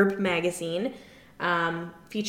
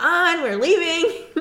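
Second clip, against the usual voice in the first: play-acted annoyed, very high, very drawn-out holler; 9 semitones higher, 4 dB louder than usual. Recapping a scene, the speaker quotes a woman yelling upstairs: mock-annoyed mom yelling upstairs. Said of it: "reminds me of an annoyed mom".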